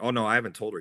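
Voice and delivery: plain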